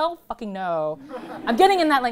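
loud and defiant.

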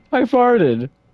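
imitated charismatic delivery. Repeating another player's words back: imitating a charismatic delivery. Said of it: "You said with such charisma".

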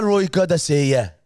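put-on Scottish accent. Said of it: "but in the accent".

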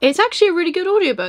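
quick, high-pitched surprise. Recommending an audiobook to listeners: surprised. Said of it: "I don't know why I sound so surprised".

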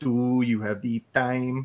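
slow, thick, over-the-top French Canadian accent. Describing a running joke among friends, doing a super French Canadian accent. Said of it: "in a super French Canadian accent".

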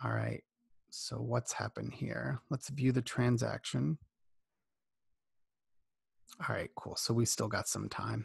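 hushed whisper. Going through a transaction at night while the kids sleep nearby, whispering. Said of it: "I sound like I'm whispering because my kids are asleep".

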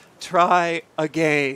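clumsy, bad, put-on English accent. Retelling what a guy said after fetching an arrow, bad English accent. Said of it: "like a bad English accent".

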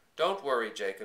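plain reading voice

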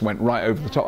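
ordinary delivery

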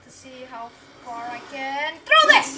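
loud, playful shout with wide pitch range.

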